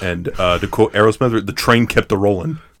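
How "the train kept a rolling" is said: ordinary talk, nothing marked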